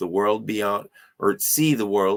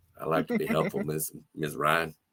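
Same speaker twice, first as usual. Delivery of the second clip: put-on narrator voice, dropped low, deliberately badly done; 4 semitones lower, 6 dB quieter than usual. Reading a character's line aloud: Morgan Freeman voice. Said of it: "the worst Morgan Freeman impression that I'm doing when I'm reading as Brian".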